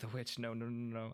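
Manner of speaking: quiet muttering to oneself, repeated. Voicing a frightened character in a game: murmuring. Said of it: "they hear Schmidt murmuring".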